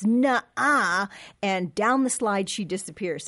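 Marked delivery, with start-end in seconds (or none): 0.0-1.1 put-on little girl voice, disgusted brush-off tone. Retelling a little girl's reply to a boy: imitating a disgusted little girl. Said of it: "looks up at me with a disgust".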